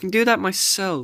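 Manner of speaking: shrill, very high, loud, whiny. Reading a story aloud, a character refuses help: whining. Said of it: "she whined".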